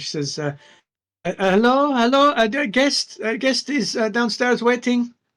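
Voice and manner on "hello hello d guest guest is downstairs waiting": very high, slow little halfling matron voice. Voicing a little halfling matron knocking on a door: little halfling matron voice. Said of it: "it's the voice of the little halfling matron".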